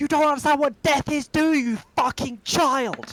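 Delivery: very high, shrill, enraged furious yell. In a tabletop game, a character yells at someone hitting another character: shouting at someone. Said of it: "just shouting at someone who's hitting".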